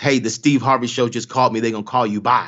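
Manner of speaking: put-on angry, mad tone. Retelling a sister's phone call about the show: imitating angry sister. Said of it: "She's mad".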